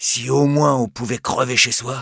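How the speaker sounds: plain reading voice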